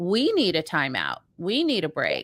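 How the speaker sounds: plain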